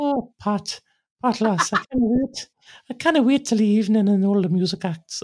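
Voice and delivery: put-on Geordie accent. Asked by another speaker to do her Geordie Joy: Geordie Joy impression. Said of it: "do your Geordie Joy".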